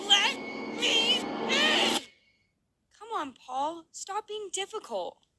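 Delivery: mock demonic voice, high, slow, creepy whine.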